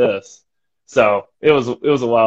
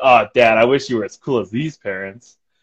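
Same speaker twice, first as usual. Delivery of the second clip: mock teasing, joking tone. Retelling teasing their dad at the beach, very jokingly. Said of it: "very jokingly".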